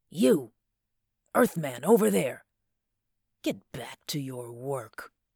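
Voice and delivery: harsh, rasping voice ringing out, echoing off walls. Narrator reads a man ordering the Earthman McGowan back to work, rasping and ringing. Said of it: "his rasping voice went bounding about the walls".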